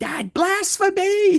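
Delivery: very high, shrill, high-pitched screaming voice. Picturing Robert in the speaker's ear: imitating Robert screaming. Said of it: "just screaming".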